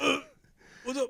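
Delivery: words gasped out in a very high voice. Retelling how a friend answered: imitating a friend's gasping voice. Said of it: "his voice sounded like, he was like".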